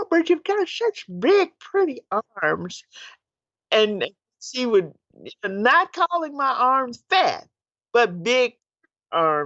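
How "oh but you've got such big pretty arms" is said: little voice, small and high-pitched. Speaker recalls her aunt's compliments, imitating Aunt Sally's little voice. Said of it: "she had this little voice".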